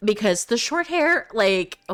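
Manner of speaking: voice breaking and cracking mid-phrase. Describing a short hairstyle, voice cracking. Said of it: "my voice just cracked".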